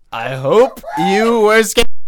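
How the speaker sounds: high, loud, slow mock horror.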